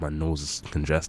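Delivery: ordinary delivery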